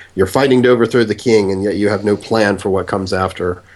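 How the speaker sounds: plain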